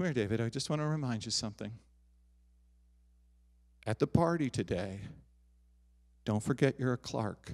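fond, doting, very loving and tender coaxing tone. Retelling a mother reminding her son before a party: imitating a mother speaking very lovingly. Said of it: "Very lovingly".

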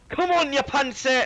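clumsy, failed put-on Scottish accent. On YouTube, after admitting failure, the speaker tries again: failed Scottish accent. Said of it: "Something like that".

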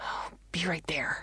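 through gritted teeth. Narrator reads a gamer's line mid-match, spoken through gritted teeth. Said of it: "she gritted".

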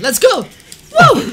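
"woo" cheer with the voice cracking. Playing a game as a fight with ghouls begins, voice cracking. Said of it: "My voice just broke a little bit".

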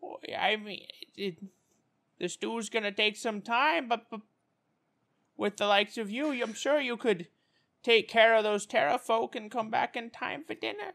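put-on high, very old woman voice. The game master voices Madam Pu'pu replying to the players, as an ancient old woman. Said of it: "You realize it's a human woman, impossibly old, crippled by arthritis, blinded by cataracts".

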